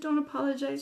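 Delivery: plain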